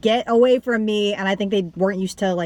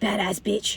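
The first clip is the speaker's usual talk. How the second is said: hushed, very audible stage whisper; 5 dB quieter than usual. Retelling what someone in the theater said to his friend: imitating an audible whisper. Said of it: "very audibly whispers".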